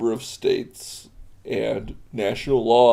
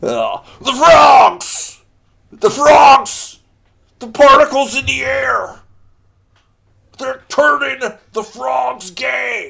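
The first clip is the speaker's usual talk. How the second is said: very loud, shrill yell at full lungs; 14 semitones higher, 9 dB louder than usual. Doing an Alex Jones impersonation: Alex Jones impersonation. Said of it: "That was my Alex Jones impersonation".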